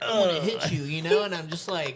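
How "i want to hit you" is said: put-on weird, high, whiny little kid voice. Retelling a fight, imitating the tall guy: weird little kid voice. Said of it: "did this weird, like, little kid".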